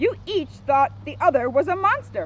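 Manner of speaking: plain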